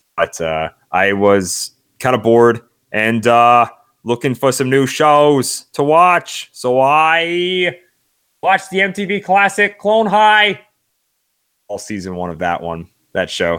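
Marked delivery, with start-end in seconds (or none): 4.1-10.6 high, swooping sing-song delivery with drawn-out "I". Naming a show just watched, as JFK from Clone High. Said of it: "That was my J F K impression".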